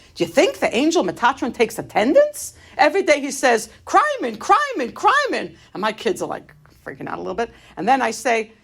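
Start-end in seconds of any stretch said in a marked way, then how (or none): 0.1-5.5 worked-up, aggravated rant with swooping pitch. Retelling what they said to their little kids: retelling an aggravated rant. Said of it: "I'm going off on one of my things".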